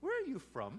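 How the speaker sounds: put-on high, small Welsh little boy voice. Speaker retells a little boy on the speaker's lap asking a question; little boy's Welsh voice. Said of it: "in his little Welsh voice".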